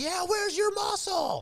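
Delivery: mock high-pitched, shrill, jeering scream. Recalling joining a crowd taunting a wrestler, retelling a screamed taunt. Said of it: "I was screaming at them as well".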